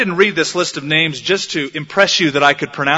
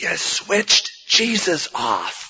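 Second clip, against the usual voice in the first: very slow, loud, carrying stage whisper; 3 semitones higher, 4 dB quieter than usual. Retelling a shepherd's line in a Christmas play: imitating a loud stage whisper. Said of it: "in a loud stage whisper said".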